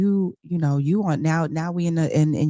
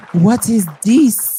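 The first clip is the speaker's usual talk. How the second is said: put-on Nigerian accent, spoken louder; 5 semitones higher, 8 dB louder than usual. Retelling Wendy reacting to Stacy being back with her husband, Nigerian accent. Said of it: "in her Nigerian accent".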